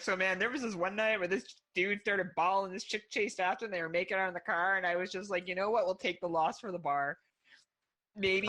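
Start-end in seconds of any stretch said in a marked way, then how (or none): none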